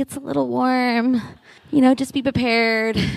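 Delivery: sugary, sweet little voice. Speaker tells the audience how someone warned them: Andrea's sweet little voice. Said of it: "in her sweet little voice that she has".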